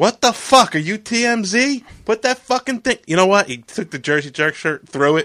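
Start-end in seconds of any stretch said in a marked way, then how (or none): 0.0-3.0 put-on yelling, higher. Retelling being yelled at in the street for filming: imitating someone yelling. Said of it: "He yelled at me in the middle of the fucking street".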